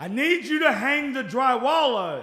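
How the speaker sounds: very loud, shrill shout. Quoting him telling them to hang the drywall, in a raised, loud voice. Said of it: "he will raise his voice. Like".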